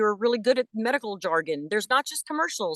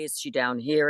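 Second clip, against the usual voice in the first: low voice placed down in the chest. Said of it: "where she's placed vocally".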